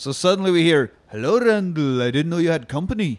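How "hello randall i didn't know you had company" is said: put-on almost-English accent. Retelling a movie scene, doing a line as Vosloo: almost English accent. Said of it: "almost an English accent".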